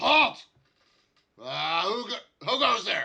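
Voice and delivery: stern, very loud, booming, slow authoritarian voice. Voicing a guard who halts approaching players: authoritarian guard voice. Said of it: "his best authoritarian voice".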